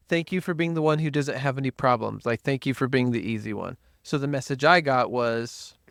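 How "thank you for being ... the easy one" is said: plain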